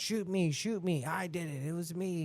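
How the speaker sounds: mock desperate, frantic outcry with screaming. Telling a story, the speaker acts out a man screaming right after it happened. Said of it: "he started to scream".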